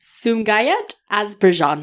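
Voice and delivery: put-on Soviet Russian accent. Reading out a place name from a list: put-on russian accent. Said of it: "So I kinda did a Soviet accent".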